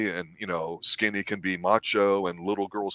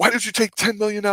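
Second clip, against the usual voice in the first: put-on huffy indignant voice, higher and louder; 13 semitones higher, 5 dB louder than usual. Retelling a TV scene where Bobby storms in: imitating huffy Bobby. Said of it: "Bobby comes in there all huffy puffy".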